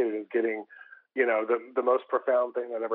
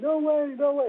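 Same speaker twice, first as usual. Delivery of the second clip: shrieking, very high, laughing and crying at once; 4 dB louder than usual. Recounting a woman's reaction in a coffee shop, retelling screaming, laughing, crying. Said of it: "And she's screaming, laughing, and screaming, crying".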